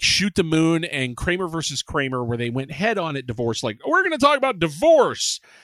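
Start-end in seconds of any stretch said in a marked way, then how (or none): 3.9-5.4 much higher, loud, blunt, heavy-handed voice.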